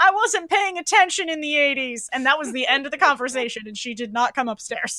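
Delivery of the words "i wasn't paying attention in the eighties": put-on high-pitched yelling. Retelling the mom's answer yelled up from the basement: imitating mom yelling back. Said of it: "she yells back up".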